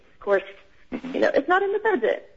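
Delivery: put-on anxious, nervous, very high-pitched voice. Speaking up for everyone to a group, the speaker is nervous. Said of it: "I'm so nervous".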